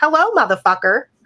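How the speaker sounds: put-on high, small little-kid voice. Asking a co-host about a TikTok, imitating the kid's voice. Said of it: "have you ever heard that TikTok where the kid goes".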